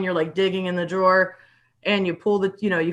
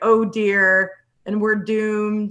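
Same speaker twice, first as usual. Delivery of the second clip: put-on slow, fretting, anxious robot voice. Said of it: "Pretend like I do a really good impression".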